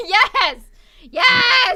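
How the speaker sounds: very high, very loud, drawn-out yelling. Reacting to a joke another speaker made: yelling. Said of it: "No need to yell".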